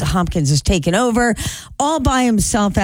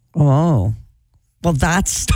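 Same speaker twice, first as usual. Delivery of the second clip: thoroughly unimpressed, underwhelmed tone; 3 semitones lower than usual. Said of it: "You sound so unimpressed".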